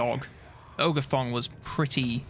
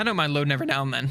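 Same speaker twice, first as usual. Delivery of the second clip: voice breaking and cracking mid-line; 3 dB louder than usual. Speaker talking about how he plays Total War: voice cracking. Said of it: "Oh my god, voice crack".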